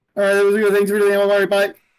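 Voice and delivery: slick, high, loud, rapid-fire rattled-off talk. Playing a character in a game, trying to act slick by talking really fast. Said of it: "talking really fast".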